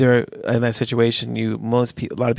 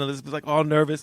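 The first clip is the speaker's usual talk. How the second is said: usual speaking voice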